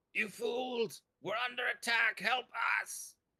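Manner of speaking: very high, creature-like hobgoblin voice. In a tabletop game, voicing a hobgoblin calling for help, hobgoblin impression. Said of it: "I will do my best hobgoblin impression".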